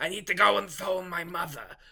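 rough, gravel-throated, put-on movie-boss voice. On a podcast, quoting a character from Independence Day, imitating a gravelly movie voice. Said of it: "the really gravelly voice is like".

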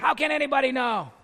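sneering, mocking, demon-like voice. Retelling a voice speaking through a dying lady: imitating a mocking demonic voice. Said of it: "a voice that wasn't a sweet little old lady".

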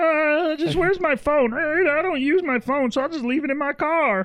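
mimicking, mocking voice. At the other speaker's request, doing a mocking impression of co-speaker. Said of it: "Do that voice again. It's basically me".

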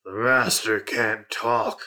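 ghostly, haunting, much spookier eerie voice. Narrating a game, shadows beyond the fence speak up, much spookier voice. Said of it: "in a much more spooky voice to say".

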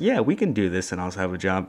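plain

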